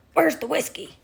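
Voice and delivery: belligerent, aggressive, pushy, parrot-like delivery. Imitating the parrot's favorite question: imitating Bailey asking aggressively. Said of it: "he says it very aggressively".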